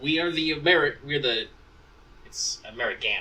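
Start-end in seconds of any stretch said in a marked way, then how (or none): none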